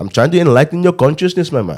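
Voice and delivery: guru-style Indian accent. Explaining what he pictures when he does the accent, Indian accent as a guru. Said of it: "when I do the Indian accent".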